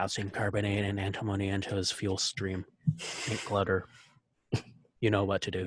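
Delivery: muttered under breath. A player's character passes the technicians and says this, muttered under breath. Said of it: "I will say under my breath".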